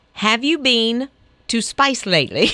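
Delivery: put-on Australian accent. Teaching the other speaker to talk australian, speaker models a line in an australian accent. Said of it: "teach you how to speak in an Australian".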